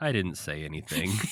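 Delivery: soft, dejected, crestfallen, sad voice. Retelling a character's line after a flopped joke: imitating Fozzie saying it sadly. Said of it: "And he just sadly goes".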